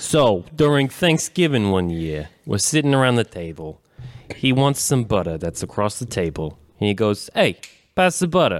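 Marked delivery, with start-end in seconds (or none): 7.3-8.6 put-on Long Island accent, pitched up. Retelling a Thanksgiving dinner, imitating an uncle from Long Island. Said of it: "I gotta impersonate my, uh, my uncle from Long Island".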